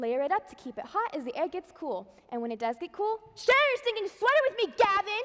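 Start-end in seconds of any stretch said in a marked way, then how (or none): 3.3-5.2 abrupt, high-pitched, loud, shouted outburst. Breaking off a fashion tips talk to call out a name: yelling. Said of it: "why did you just yell?".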